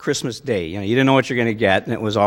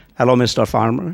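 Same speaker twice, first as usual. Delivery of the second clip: bad, cheesy put-on Middle Eastern accent. Retelling how you called Bill at home for some fun, in a really crummy Middle Eastern voice. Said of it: "in a really crummy Middle Eastern voice".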